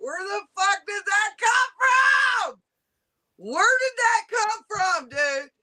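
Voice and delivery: insistent, rising voice building into a worked-up outburst. Confronting Jack during a stream, yelling. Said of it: "Why are you yelling?".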